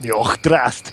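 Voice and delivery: fake dwarf-style voice. Repeating a name in character: perfect Dwarven accent. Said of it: "That was my perfect Dwarven accent".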